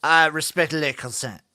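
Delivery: terrible put-on French accent. Playing a French character, the speaker talks in a terrible fake French accent. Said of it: "Your French accent is like all your other accents".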